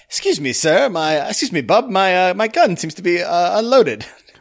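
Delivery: put-on British film star voice. Retelling a film scene, asking for bullets in a Cary Grant impression. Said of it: "I don't know why I made it British, but Cary Grant".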